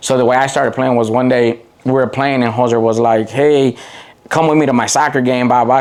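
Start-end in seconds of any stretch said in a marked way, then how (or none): none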